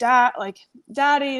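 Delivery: tearful, crying, pleading voice. Retelling calling out to dad from the car: imitating own past crying. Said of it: "I was just crying, and I was like".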